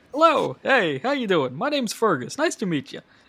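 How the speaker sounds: friendly, sing-song, bright and bouncy voice. Voicing the dad of the mouse household introducing himself: friendly Fergus voice. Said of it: "real friendly fella".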